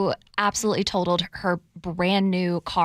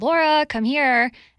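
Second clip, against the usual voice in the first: mock yelling; 7 semitones higher, 5 dB louder than usual. Telling the story of getting her car, retelling mom's yell. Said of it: "my mom yelled from downstairs".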